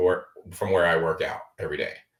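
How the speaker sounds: ordinary talk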